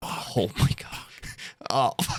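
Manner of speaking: whispered, dismayed and despairing. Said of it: "I'm like".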